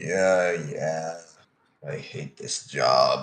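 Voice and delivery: low, miserable, grumbling mutter under the breath. Narrator voicing an annoyed old elven ranger talking to himself, muttering. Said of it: "You hear him mutter in Elven".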